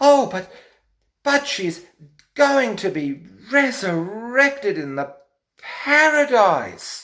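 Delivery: strangled, very high-pitched, excited strangulated voice. Retelling a woman's words, imitating a strangulated voice. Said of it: "she says with this strangulated vocal cord".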